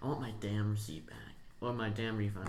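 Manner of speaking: normal talking voice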